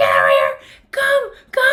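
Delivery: desperate, frantic yelled scream with wild pitch swings. Retelling calling Bodhi over during an alligator attack, retelling a frantic scream. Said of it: "I'm screaming at him to get over here".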